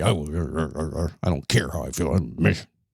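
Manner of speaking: very low, slow, sulky, drawn-out grumpy grumbling. Imitating listeners who don't care how they feel: imitating someone grumpy. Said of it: "Some of you might be grumpy and say".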